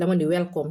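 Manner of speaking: ordinary talk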